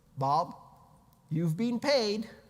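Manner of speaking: loud automated notification announcer voice. Describing a wallet payment notification, AOL voice impression. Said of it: "with the A O L voice".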